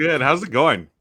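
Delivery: talking with mouth full. Host greeting a guest on a call while eating gummy candies, talking with mouth full. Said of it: "I've got my mouth full".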